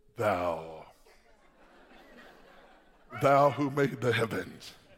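put-on very deep, low, old-style reverent and solemn praying voice. Telling listeners how they need not sound when praying, the speaker demonstrates a deep prayer voice. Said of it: "how do I have to sound?".

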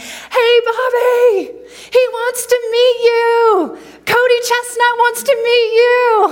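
very high, very loud, slow, drawn-out hollering. Retelling a friend calling out after a show: imitating Dan yelling. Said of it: "he was yelling".

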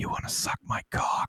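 clumsy, hushed stage whisper. Retelling a coworker whispering in his ear during a sale: imitating a loud whisper. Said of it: "come up and whisper in my ear".

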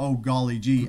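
mock American accent, put on by an Irish speaker. Retelling an irish coworker asked to do an accent, in a put-on american accent. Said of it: "do an accent".

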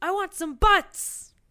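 very high, shrill, very slow, dragged-out yelling. Retelling a movie scene where a guy spills his coffee: imitating someone yelling. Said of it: "yelling in the background".

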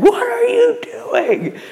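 very high, frantic madman shriek. Retelling finding a man peeing on the window: imitating own screaming.

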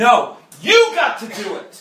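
speaking up loudly, passionate. Talking about god and temptation, the speaker answers with a raised voice. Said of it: "I'm raising my voice".

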